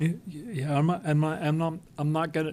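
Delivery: halting, repeated words. A commissioner, called on at a meeting, begins speaking, stuttering. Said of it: "forgive me for stuttering".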